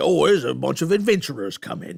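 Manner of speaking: loud, growling orc monster voice. Explaining the voices he does playing Dungeons and Dragons, the speaker demonstrates an orc voice. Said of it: "when I do orc voices".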